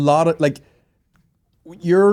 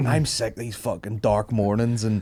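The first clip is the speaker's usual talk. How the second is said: ordinary talk, nothing marked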